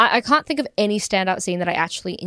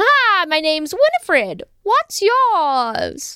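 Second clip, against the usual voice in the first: campy witch voice, pitched up high; 9 semitones higher, 3 dB louder than usual. Trading impressions with the other speaker, doing a Winifred Sanderson voice. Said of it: "being one Winifred? Of the Sanderson sisters".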